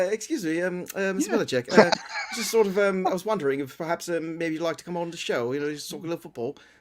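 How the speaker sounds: imitated English accent. Imitating how they'd ask a guest on the show: put-on English accent. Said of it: "that's a very good accent".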